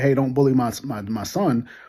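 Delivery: ordinary talk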